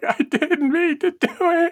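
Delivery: very high, weepy, drawn-out fake sobbing. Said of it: "in the bathroom crying".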